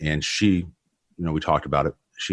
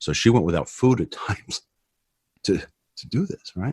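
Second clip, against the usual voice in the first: tearful voice, catching and choking up; 4 semitones higher than usual. Telling a personal story to a listener, speak while tearing up. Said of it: "I'm tearing up here".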